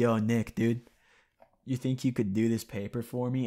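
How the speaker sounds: imitated quiet, tired tone. Retelling how a slumped guy leaned over to ask Nick, imitating a quiet, tired tone. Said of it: "say it in that, like, quiet, like, tired tone".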